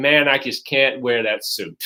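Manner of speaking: usual speaking voice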